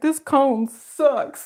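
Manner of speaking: upset, unhappy dog voice. Speaking for a dog wearing a cone, voicing the upset dog. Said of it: "She's like".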